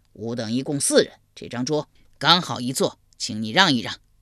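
coarse, rough-voiced. Narrator reading an uneasy character speaking to a seated man: gruff, rough-voiced. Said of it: "粗声粗气道".

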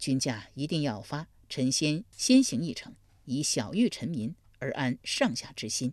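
plain reading voice

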